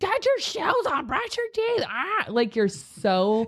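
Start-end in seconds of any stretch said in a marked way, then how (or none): 0.0-2.3 very high, hurried, rushed crow squawk. Acting out rushing kids to get ready for school: imitating a hurried crow-like voice. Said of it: "And you sound like a crow".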